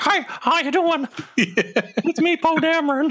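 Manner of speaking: put-on very high, chirpy small kid voice. Imagining a young version of the character in a new series, little kid Poe Dameron voice. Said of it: "doing like a little kid voice".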